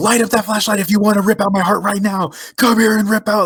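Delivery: mock very high, rushed, top-of-the-lungs taunting screaming. Retelling Shane taunting demons during a flashlight test, imitating him screaming. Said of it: "screaming at at the demons like".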